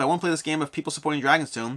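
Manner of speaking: ordinary talk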